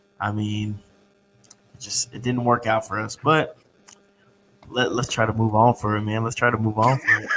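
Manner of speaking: depressed voice. Naming who underperformed in Sunday's game: depressed. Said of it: "you sounded so depressed when you said that".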